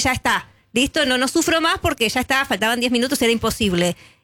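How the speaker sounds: ordinary talk, nothing marked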